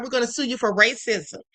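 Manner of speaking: normal talking voice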